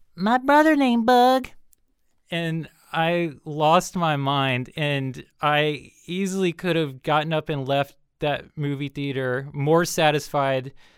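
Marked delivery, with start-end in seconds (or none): 0.2-1.5 put-on very high, tiny little girl's voice. Retelling a moment in a movie theater, the speaker quotes a little girl in a little girl's voice. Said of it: "you just hear this little girl's voice say".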